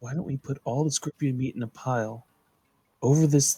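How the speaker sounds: barely-there, very soft, hushed half-whisper. Suggesting a trade plan to the party: very low half-whisper. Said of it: "In a very low whisper".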